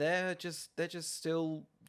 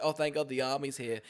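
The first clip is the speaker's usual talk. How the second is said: ordinary talk, nothing marked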